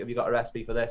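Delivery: plain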